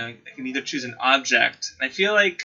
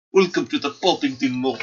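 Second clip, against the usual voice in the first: bad, terrible fake put-on Russian accent; 2 semitones higher, 4 dB louder than usual. Speaker imagines the setting is Siberia and welcomes everyone to the mall: terrible Russian accent. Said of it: "Terrible Russian accent".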